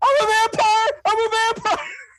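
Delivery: put-on kid playing vampire, very high, drawn-out. Imitating the brother running around the front yard: imitating a kid playing vampire. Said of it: "running around the front yard going".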